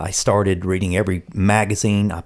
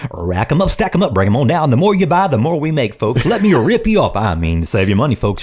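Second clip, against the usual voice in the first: pumped-up, swooping store announcer DJ patter; 6 semitones higher, 5 dB louder than usual. Recalling his college job as the Shoe Carnival DJ, doing the Shoe Carnival DJ patter. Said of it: "I was the, the shoe carnival D J".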